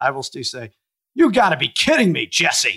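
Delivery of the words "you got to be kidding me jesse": high, raised, sing-song outburst with big swoops. Quoting what gets said on seeing an obese man: Mean Gene Okerlund voice.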